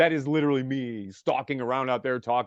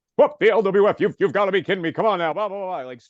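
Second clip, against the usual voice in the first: fast, loud, straight wrestling ring announcer delivery; 7 semitones higher, 6 dB louder than usual. Recalling your character when you first started in LWF, straight Mean Gene announcer voice. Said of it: "like straight announcer guy".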